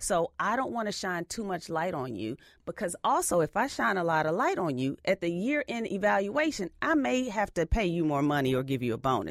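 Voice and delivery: ordinary talk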